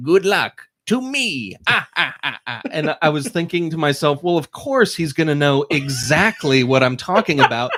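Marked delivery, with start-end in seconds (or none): 0.0-2.6 gloating cartoon villain voice, high-pitched cackle. Explaining what the speaker wanted someone to say, the speaker uses Wario's voice. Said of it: "in Wario's voice".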